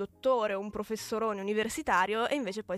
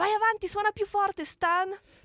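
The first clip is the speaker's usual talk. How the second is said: mock shrill, very high bawling yell; 11 semitones higher, 4 dB louder than usual. Retelling how a mother answered the complaining neighbours, retelling a yell back. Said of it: "e la mamma rispondeva sbraitando".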